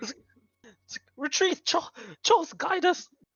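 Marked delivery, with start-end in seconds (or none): 1.2-3.1 very high, frantic, panicked cry. Narrating a battle, the enemy's rear ranks call out, panicked soldiers calling retreat. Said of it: "The back is panicking".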